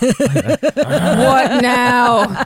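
weary, depressed, utterly pained, long-suffering tone. Retelling the district attorney's reaction to a colleague: imitating pained Adam Schiff. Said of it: "he is always so pained".

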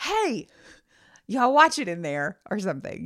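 acted-out shouting, as if across the house. Retelling calling out to the kids from the other room, retelling a scream from another room. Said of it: "to scream from the other room".

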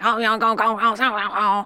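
imitated Louisiana accent. Showing how Louisiana sounds, like drunk crawfish: imitating a Louisiana accent. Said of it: "Louisiana does sound like".

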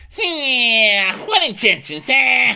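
high, loud mock tough guy, words chewed.

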